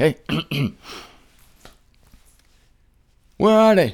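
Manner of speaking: incredulous prophet voice full of plain disbelief. Telling the story, the speaker imitates Elijah hearing God's answer: Elijah impression. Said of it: "This is my imitation of Elijah when he hears this".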